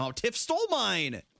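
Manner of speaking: very high-pitched whining voice. Reacting after Tiff takes your compliment, in a whiny voice. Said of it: "Why do I sound so whiny?".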